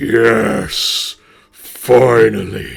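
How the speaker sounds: echoing, booming, rough voice. Narrating the answer after the players are told to shout, Riordan's booming voice. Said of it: "you hear a booming voice echo".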